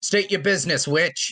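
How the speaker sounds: assertive commanding voice. Voicing a soldier challenging a witch: assertive voice. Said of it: "the assertive voice says again".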